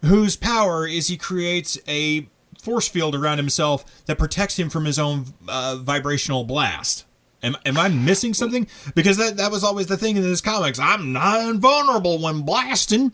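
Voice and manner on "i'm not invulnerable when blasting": put-on American Southern accent, pitched up. Quoting a comic character's catchphrase in a put-on Southern accent. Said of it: "I think I just did a better Southern accent than he did".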